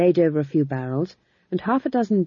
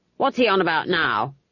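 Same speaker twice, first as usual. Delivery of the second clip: insistent, pressing, demanding tone. At a play, a grandmother nudges her companion and asks, demanding. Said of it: "she demanded".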